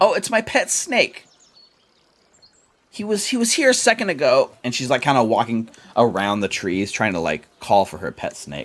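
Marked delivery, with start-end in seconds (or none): 0.0-4.5 put-on high, slow, unhurried little girl voice. Narrating a game, voicing a startled halfling girl looking for her pet snake, little girl character voice. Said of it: "What's a Slithers, little girl?".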